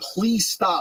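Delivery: mock high begging, through laughter. Retelling begging a friend to stop joking: imitating own begging. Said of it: "I'm begging him".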